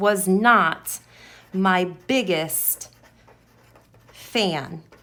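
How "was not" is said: was not hit hard, stressed a bit louder. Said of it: "I'm gonna put that in all capital letters".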